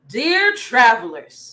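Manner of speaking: put-on royal voice made manly. Reading the king's challenge to the travelers, manly king voice. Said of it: "In my king's voice".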